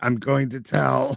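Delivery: put-on robotic alien voice. Doing a Dalek line for the others: Dalek voice. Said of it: "that does a number on my throat".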